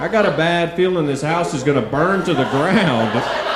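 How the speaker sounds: high, put-on menacing tough-guy voice.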